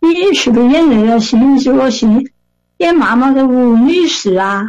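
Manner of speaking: put-on Sichuan dialect with Sichuanese accent. Retelling an old Sichuan lady asking if she played the mother, in Sichuan dialect. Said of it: "用四川话跟我说".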